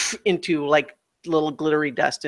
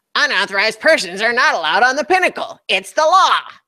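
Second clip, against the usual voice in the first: little robot voice, high and quick; 8 semitones higher, 5 dB louder than usual. A game master voices a flying robot swooping at the players, in a little robot voice. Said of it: "your little robot voices".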